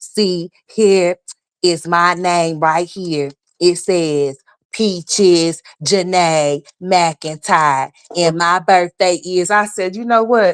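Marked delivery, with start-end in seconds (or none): 0.0-9.5 halting, dragging, slow reading-aloud voice. Mocking a woman who reads her document aloud: imitating someone reading very slowly. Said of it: "she just so fucking slow".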